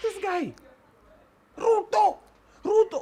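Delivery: mock very high, slow, drawn-out shouting. Imitating the other speaker at a microphone: imitating Eric shouting. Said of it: "Then why are you always shouting?".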